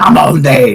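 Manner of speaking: loud, full battle scream. Voicing a fighter who chops at a foe: screaming at everyone. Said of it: "he just screams at everyone".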